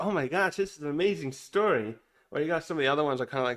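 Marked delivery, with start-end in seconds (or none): none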